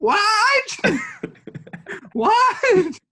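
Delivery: high, swooping yell way up in the voice. Retelling how Easton yells on the podcast: imitating Easton yelling. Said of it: "he yells".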